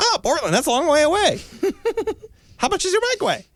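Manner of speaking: very high-pitched squeaky voice climbing upward. Speaker recounts a guy questioning him about where he came from, imitating his high-pitched voice. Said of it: "he's got this really high pitched voice".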